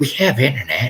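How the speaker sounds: very snotty tone. Retelling what she said when told there was no private place to work, imitating a snotty tone. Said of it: "she said in a very snotty tone".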